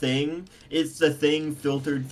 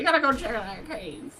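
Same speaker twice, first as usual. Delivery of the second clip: very high-pitched put-on old man voice; 9 semitones higher than usual. On a stream, repeating a line to the other speaker in an old man voice. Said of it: "I just made an old man voice".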